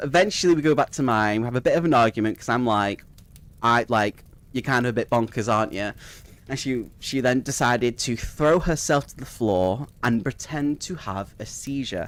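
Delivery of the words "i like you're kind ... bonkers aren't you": ordinary delivery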